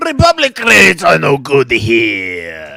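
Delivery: put-on loud, swooping half-Italian accent with some words stretched. While playing a game, a player voices a line in a half-Italian Watto accent. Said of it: "half Italian accent of Watto you're doing".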